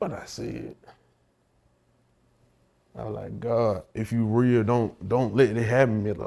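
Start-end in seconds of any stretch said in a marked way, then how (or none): none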